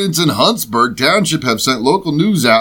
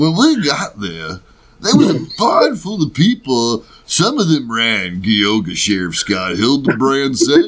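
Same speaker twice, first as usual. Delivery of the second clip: Ohio-style voice. Reading a sheriff's account aloud for listeners, in a put-on Ohio voice. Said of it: "do you want me to read it in the Ohio voice?".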